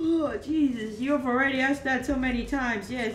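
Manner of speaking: sleepy, drowsy, tired voice while yawning. Asked yet again if they're sleepy, the person called babe answers, yawning. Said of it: "you are again, yawning".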